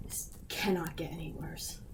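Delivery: urgent, unvoiced, hushed whisper.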